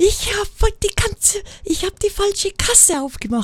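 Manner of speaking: loud, high shout carrying across a distance.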